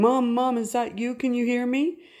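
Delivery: put-on high, tearful, weeping crying voice. Retelling a scam phone call that pretended to be a son: imitating a crying voice. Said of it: "an adult male voice crying and saying".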